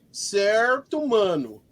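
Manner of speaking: put-on São Paulo periphery street accent. Speaker imitates how a guy from the periphery greets you, in a periphery accent. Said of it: "ele fala assim".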